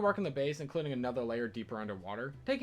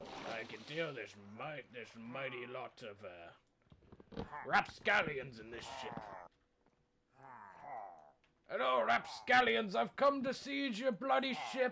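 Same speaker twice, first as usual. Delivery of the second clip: put-on pirate voice; 4 dB quieter than usual. Player raiding a pirate ship in a game, in a pirate voice. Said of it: "I'm a bloody pirate".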